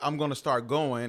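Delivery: plain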